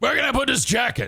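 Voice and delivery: rough, gruff, growly voice. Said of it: "he's real grovelly and just gruff".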